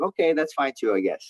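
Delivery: ordinary talk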